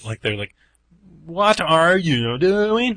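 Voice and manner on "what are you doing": very slow, high, loud backwards-sounding reversed-speech voice. Comparing an awful impression to backwards talking: Twin Peaks backwards talking voice. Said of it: "the backwards talking in Twin Peaks".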